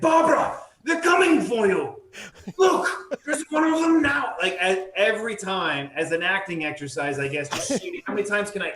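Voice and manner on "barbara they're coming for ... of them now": very high, loud theatrical dramatic delivery. Recalling repeating a line to everybody as an acting exercise, dramatic delivery. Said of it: "I would come back dramatically".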